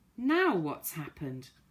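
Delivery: irritated, exasperated, very annoyed tone. Reading a story aloud, a character asks what happened: annoyed voice. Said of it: "in a most annoyed voice".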